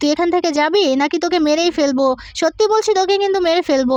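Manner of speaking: usual speaking voice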